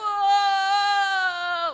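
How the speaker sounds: loud, high shout of whoa.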